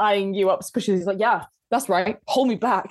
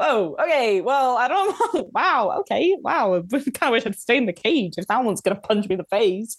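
slow, cartoonish talking chicken voice. Voicing a freed chicken that was just tapped on the beak: voicing the chicken. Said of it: "you can hear the chicken go".

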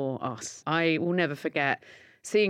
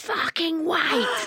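very high-pitched East End barmaid voice; 12 semitones higher, 3 dB louder than usual. Act out your youngest turning around on the way to nursery, in an East End barmaid voice. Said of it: "like the voice of an East End barmaid".

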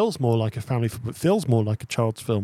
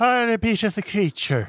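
put-on Irish accent, much higher pitch; 10 semitones higher than usual. Mocking a film's drunk politician character: Honest John Irish accent impression. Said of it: "a better impersonation of an Irish person".

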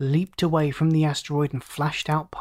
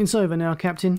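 plain reading voice

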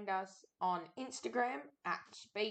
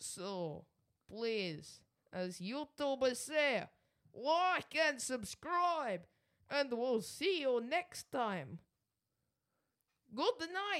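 English in a heavy-handed, put-on Russian accent; 4 semitones higher than usual. Signing off the YouTube outro in a put-on Russian accent. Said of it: "does he not sound like FPS Russia when he does that accent?".

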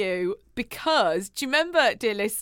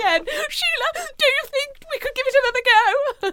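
posh, very high-pitched, irate voice; 14 semitones higher, 3 dB louder than usual. Playing a caller in a phoner bit; Ken's posh upset voice. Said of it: "I like how you put Ken really posh".

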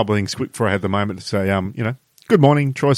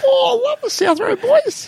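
put-on very high-pitched small child's voice. Imagining a family at dinner hearing a new episode is out: little Timmy voice. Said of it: "And little Timmy's like".

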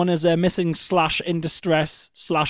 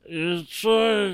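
mock drunken slurring, quieter; 2 semitones higher, 5 dB quieter than usual. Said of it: "so pissed that it was like".

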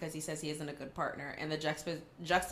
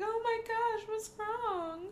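put-on very high, very slow, drawn-out weepy crying. Retelling how Amanda came upstairs: imitating Amanda crying. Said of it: "Amanda comes upstairs crying".

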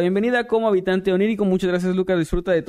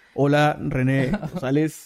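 robotic text-to-speech voice, lower; 5 semitones lower than usual. Answering a viewer's request for a birthday greeting in Loquendo voice. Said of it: "pueden felicitarme con voz de loquendo".

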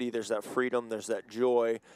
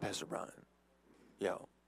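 put-on hushed, dead-serious whisper; 4 semitones lower, 12 dB quieter than usual. Retelling a kid asking to spin the wheel: imitating someone dead serious. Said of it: "he comes up to me dead serious".

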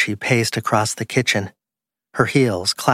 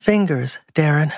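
barely above a whisper, higher pitch; 5 semitones higher than usual. A woman speaks to a man through a thick oak door, in a whisper. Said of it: "her voice little more than a whisper".

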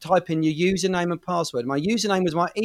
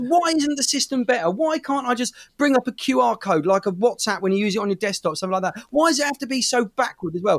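fed-up, frustrated, exasperated complaining; 5 semitones higher than usual. Retelling frustration at a slow login system: retelling own angry shouting. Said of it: "And I'm shouting this out loud".

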